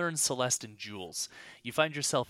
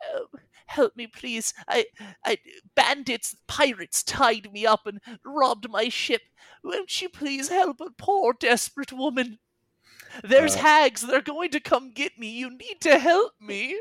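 put-on helpless old woman voice, very high and loud; 12 semitones higher, 10 dB louder than usual. Narrating a tabletop game scene where a hag poses as an old woman, old woman's voice. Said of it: "in our old woman's voice".

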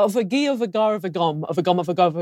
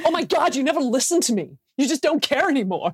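put-on American accent, pitched up; 5 semitones higher than usual. Recalling reading in as one of an arguing couple, american accent. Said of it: "We had to do it in American accents".

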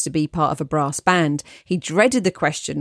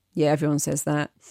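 put-on flat robotic monotone, quieter; 4 dB quieter than usual. Reading a letter, quoting a friend's tired reply: imitating a robotic monotone. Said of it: "in a robotic monotone".

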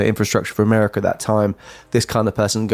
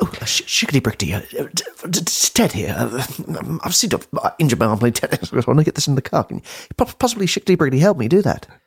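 put-on British accent, pitched much higher; 5 semitones higher than usual. Retelling how a man introduced himself to women, in a mock British accent as Ted. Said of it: "in what appeared to be a British accent".

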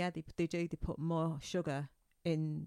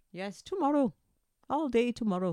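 fake Irish accent, pitched up, drifting Welsh; 7 semitones higher, 7 dB louder than usual. Podcast hosts discussing st. patrick's day, speaking in a put-on irish accent. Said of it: "Why are you speaking Welsh?".

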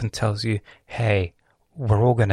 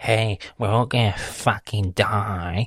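mock smug, pompous know-it-all voice. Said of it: "she said it in the most pompous way".

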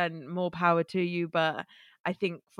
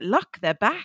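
loud put-on Welsh accent; 3 semitones higher, 6 dB louder than usual. Quoting their mum on the phone, the speaker does a Welsh accent. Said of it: "I have to do a Welsh accent".

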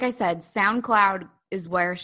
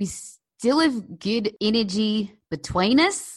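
very slow, attempted put-on South African accent; 3 semitones higher than usual. A speaker whose brother-in-law is South African tries the line: attempted South African accent. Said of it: "let me try to do it because my brother-in-law is South African".

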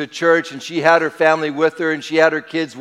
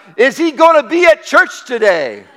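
put-on play-acted sudden blurted-out kid's shout, high and swooping; 9 semitones higher, 4 dB louder than usual. Retelling a three-year-old boy in the back seat: imitating a boy yelling out. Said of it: "just yelled out".

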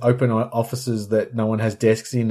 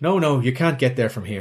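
put-on Irish local's accent. Telling a joke where a local answers a man with a map, Irish local's accent. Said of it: "do you want to do the accent?".

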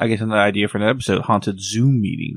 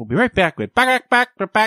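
chicken-like talk-show host voice, much higher; 13 semitones higher than usual. Riffing on a joke, speak like a chicken talk-show host. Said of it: "Sounds like of a chicken at a talk show".

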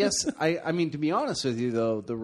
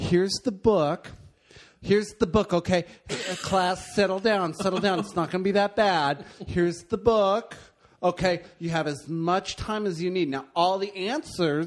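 effeminate-sounding schoolteacher voice; 3 semitones higher than usual.

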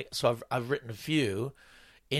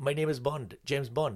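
put-on, comedy-routine style Indian accent; 3 dB quieter than usual. Retelling a comedy routine about james bond being indian: imitating an indian accent. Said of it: "David was doing the accent".

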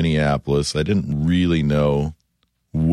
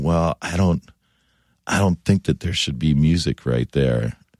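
put-on, coy, suggestive tone. Retelling what he said on the last day in the movie studio: imitating a coy remark. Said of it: "he was very, very coy about sort of saying".

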